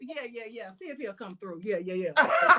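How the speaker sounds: put-on modest, casual tone. Retelling how the speaker acted when Calvin came up: imitating acting all humble. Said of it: "I tried to act all humble".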